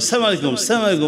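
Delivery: quick, clipped, hurried delivery. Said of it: "হাতে সময় থাকে না".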